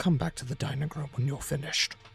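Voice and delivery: whispering. Game master voices a man who stops the player and whispers in their ear. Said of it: "he whispers into your ear".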